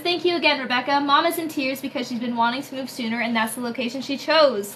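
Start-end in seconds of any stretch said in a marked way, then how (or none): none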